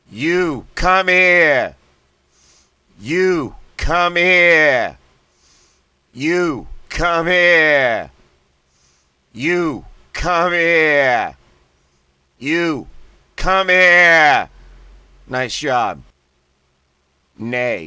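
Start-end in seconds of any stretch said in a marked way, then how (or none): 0.2-14.5 Boston accent, loud slow blasting of each word. Leading a voice exercise, repeating the phrase with a Boston accent. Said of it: "like a Bostonian".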